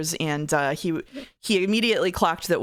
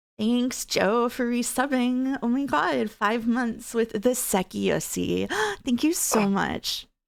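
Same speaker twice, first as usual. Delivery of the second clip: very slow, high, put-on Valley Girl drawl; 7 semitones higher than usual. Reading a viewer's sub message aloud: Valley Girl voice. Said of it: "don't do Valley Girl voice".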